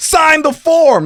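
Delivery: very high, shrill, frantic, freaked-out snap. Retelling a canoe outing, the speaker quotes an uptight guy snapping at his girlfriend: imitating a freaked-out snap. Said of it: "Like he was freaking out".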